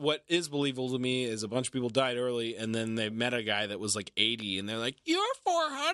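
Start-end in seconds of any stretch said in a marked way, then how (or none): 5.0-5.9 put-on elderly old man voice, higher. Acting out ancient tribespeople meeting an old man: imitating an old man's voice. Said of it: "Why are we talking like we're ninety?".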